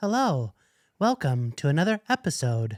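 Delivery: stiff, unnatural, professional announcer-style presentational delivery. Mimicking how a co-host opens the podcast: stiff presentational voice. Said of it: "it's not natural though".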